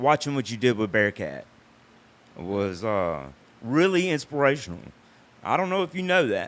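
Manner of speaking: moved, heartfelt, emotional, swooping voice. Thanking the other speaker for being an inspiration, getting emotional. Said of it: "I'm getting emotional in here".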